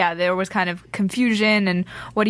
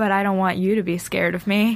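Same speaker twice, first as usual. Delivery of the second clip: put-on creepy boy voice. Retelling the end of Garrett's threatening speech, creepy Garrett imitation. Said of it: "And the way he said it was so creepy".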